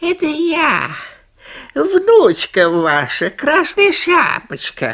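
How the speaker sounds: very high, tiny, thin little wolf voice. The wolf at grandmother's door pretends to be her granddaughter, thin little voice. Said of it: "отвечает волк тоненьким голоском".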